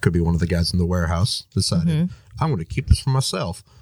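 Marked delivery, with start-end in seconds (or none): 2.4-3.6 thick, put-on country farmer accent. Voicing a warehouse worker in a theory about missing cargo: farmer accent. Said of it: "farmer accent".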